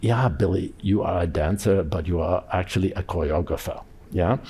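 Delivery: put-on strong German accent laid on. Quoting what a first dance teacher declared to billy: strong german accent. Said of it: "declared in a strong German accent".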